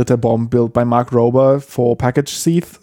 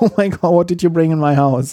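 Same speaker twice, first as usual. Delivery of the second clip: mock startled cry, yelped high, quick, fast; 5 semitones higher than usual. Retelling a glitter trap video, imitating the thieves screaming. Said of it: "you hear like the thieves screaming".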